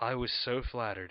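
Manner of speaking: plain reading voice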